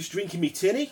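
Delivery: attempted Australian accent. Asked to comment like a couple of Aussies, in an Australian accent. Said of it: "comment like a couple of Aussies".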